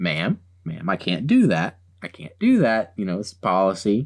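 low voice, calm and smooth as can be. Retelling how a man refused a woman's demand, imitating his calm voice. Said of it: "I can just imagine his calm voice".

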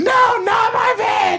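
very high, very slow, drawn-out screaming. Recounting a drunken night, acting out how she was screaming. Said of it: "She's like screaming".

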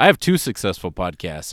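plain

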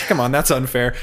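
ordinary talk

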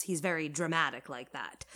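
ordinary delivery

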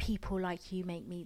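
usual speaking voice

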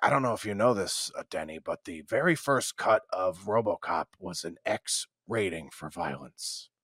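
gruff, low, grumbling voice. Retelling a film-buff coworker's trivia about RoboCop: gruff Don Milner voice.

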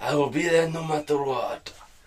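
put-on Spanish accent. Defending your impression of a Spanish man to someone, try the put-on Spanish accent again. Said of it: "he's Spanish".

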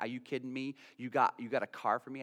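mock ecstatic tearful voice. Retelling a young lady's reply on the phone about a car: imitating someone crying with joy. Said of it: "She's just crying on the phone".

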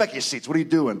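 put-on, mild scolding yell. Retelling ordering students back to their seats: imitating own past yelling. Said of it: "just yelled at them and said".

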